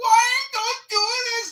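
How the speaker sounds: very high, piercing, shrill high-pitched scream. Retelling a couple passing the house, the woman: imitating a woman screaming. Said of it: "she was screaming".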